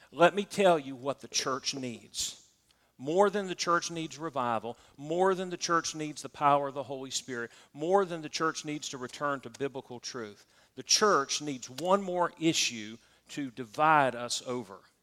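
normal talking voice

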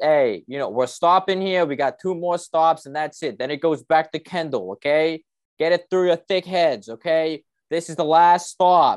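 put-on genuine Boston accent. A speaker imitates a bus driver harassing passengers, Bostonian accent. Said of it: "genuine like Bostonian accent".

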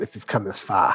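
low Boston accent, r dropped in "far".

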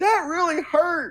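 put-on high, babyish, childlike voice of a grown man. Recounting a game character's reaction after being stabbed; Bobby's man-child voice. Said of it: "acts like a giant man child and is like".

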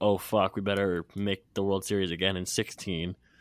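ordinary talk, nothing marked

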